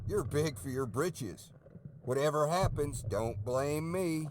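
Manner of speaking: put-on strong, rural Oklahoma accent. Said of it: "Definitely sounds like somebody from pretty deep in Oklahoma".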